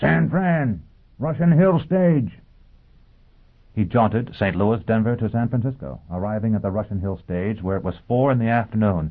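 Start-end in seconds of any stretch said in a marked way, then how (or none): 0.0-2.4 high, roared bellow, voice turned away. Reading him roaring over his shoulder after hurling the slug into the crowd: roared. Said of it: "roared over his shoulder".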